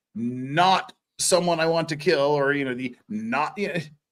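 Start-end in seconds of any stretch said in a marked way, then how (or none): none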